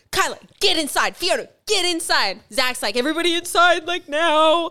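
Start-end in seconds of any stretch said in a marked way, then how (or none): 2.9-4.7 put-on meek, timid, high-pitched little boy's voice. Retelling how Zach ordered everyone inside, doing a sissy-boy impression of Zach. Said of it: "Don't say it like I was, like, a little sissy boy".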